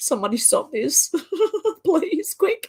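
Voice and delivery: very high laughing voice close to tears. Speaker talking about the kids, laughing, holding back tears. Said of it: "I'm trying not to cry. That's why I keep laughing".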